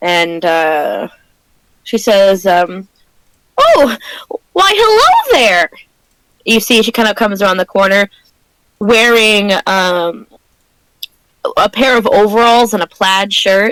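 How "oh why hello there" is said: very high, swooping put-on gnome voice. Voicing a middle-aged gnome greeting travelers: middle-aged gnome shopkeeper voice. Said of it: "middle-aged gnome kind of peeks her head out".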